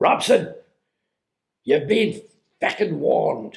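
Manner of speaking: put-on called-out line in Irish accent. Retelling what people in two cars shouted at him, retelling an Irish-voiced shout. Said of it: "Irish voice".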